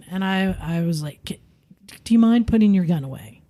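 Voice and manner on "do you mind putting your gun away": recreated calm tone. Retelling talking to a fuming man, retelling own calm request. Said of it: "talking to him calmly".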